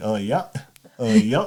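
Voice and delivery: put-on Maine accent on "oh yeah". Saying a lot of his stuff has Maine accents, then doing one: Maine accent. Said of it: "a lot of his stuff has Maine accents".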